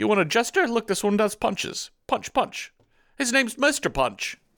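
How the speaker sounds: fake English accent pitched very high. Acting out a toy seller's lines: put-on English accent. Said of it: "We have such good English accents".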